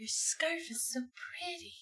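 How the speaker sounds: wispy, breathy, very airy, very high, soft, hushed. Suggesting a voice for a character: very airy voice. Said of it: "a very airy".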